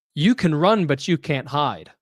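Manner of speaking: mock proclaiming, loud and ringing. Speaker retells a woman standing up behind them, retelling a loud declaration. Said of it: "in a loud voice says".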